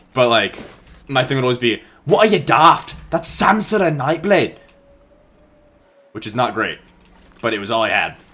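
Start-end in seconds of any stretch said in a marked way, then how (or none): 2.0-4.5 fake, bad, rough Scottish accent, pitched up. Recalling a brief role, the speaker voices Samsara Nightblade in a Scottish accent. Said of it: "So in a Scottish accent".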